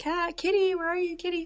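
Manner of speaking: high-pitched calling out. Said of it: "I'm like".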